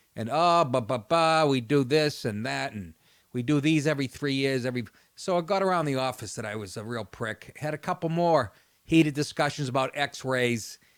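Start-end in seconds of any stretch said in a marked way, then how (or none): none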